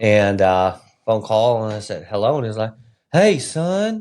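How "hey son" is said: very high, laid-on put-on Southern accent. Retelling a father's first phone call, imitating him: southern accent. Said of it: "'Cause he's Southern?".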